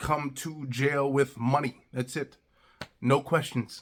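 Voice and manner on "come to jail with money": talking like a caveman. Acting out a rushed jail phone call: talking like a caveman. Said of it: "You almost gotta talk like a caveman".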